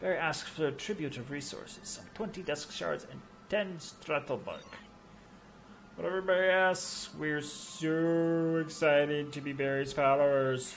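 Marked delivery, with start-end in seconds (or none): 5.9-10.7 obvious, dripping, very drawn-out sarcastic tone. Playing a game, the speaker responds to a demanded tribute of resources, sarcastic. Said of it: "Do I sense sarcasm".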